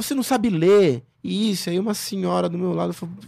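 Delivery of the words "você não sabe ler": put-on loud, raised, angry yelling. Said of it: "E começou a gritar".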